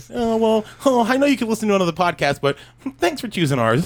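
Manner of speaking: mock overly polite, grateful tone. Re-doing own earlier thanks to listeners: imitating own overly polite thanks. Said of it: "'cause I just did, like, a little, like".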